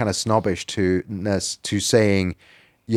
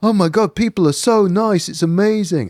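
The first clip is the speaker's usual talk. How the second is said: naive put-on English yokel accent, very high pitch; 9 semitones higher than usual. Mocking a naive attitude about difference, the speaker mimics it: put-on yokel accent. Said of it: "I'm putting on that accent".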